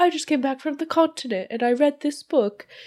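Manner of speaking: very high, put-on posh British voice. Retelling a movie scene where a character plays at being posh, imitating a posh British accent. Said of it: "pretending to be like posh and British".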